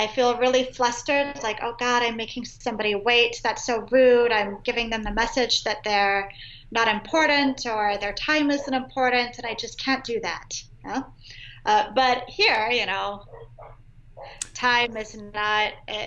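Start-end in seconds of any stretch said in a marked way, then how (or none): none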